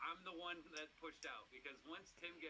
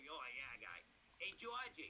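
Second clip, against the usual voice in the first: put-on thick Boston accent, swooping pitch; 2 semitones lower than usual. Retelling what Timmy from Southie said: imitating Timmy's Boston accent. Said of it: "So Timmy's like super accent".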